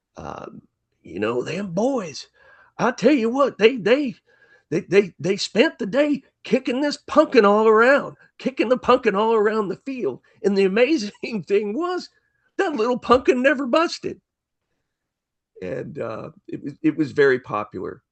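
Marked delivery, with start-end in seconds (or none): 1.5-14.2 very high-pitched, funny storyteller voice. Retelling a comic monologue record: imitating Andy Griffith's funny voice. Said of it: "in his funny voice".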